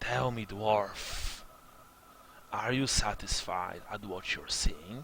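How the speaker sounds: soft, hissing half-bird, half-snake creature voice. Voicing a creature that confronts a dwarf in a story, hissing bird-snake voice. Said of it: "his voice is like this strange amalgam of human, bird, and snake".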